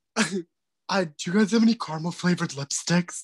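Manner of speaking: imitated heavyset woman voice. Retelling a phone call where a man pretends to be a woman: imitating a heavyset woman. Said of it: "pretending to be this like heavier set woman".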